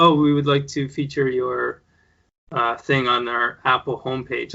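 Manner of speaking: plain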